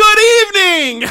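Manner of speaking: very high, booming, top-of-the-lungs yell. Retelling a greeting at Corrigan Hall as Liger shouts back, Liger shouting at top of lungs. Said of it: "as loud as he can at the top of his lungs shouts back".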